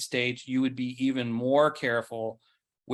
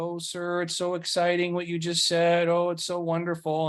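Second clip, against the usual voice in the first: high, gushing, fawning excited adoration; 5 semitones higher than usual. Retelling how church members crowd around the leader: imitating excited fawning followers. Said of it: "they're all excited and happy to see him".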